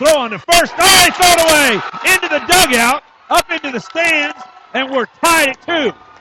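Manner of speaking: excited call, high and loud.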